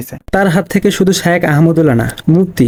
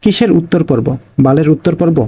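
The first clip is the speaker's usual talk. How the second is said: usual speaking voice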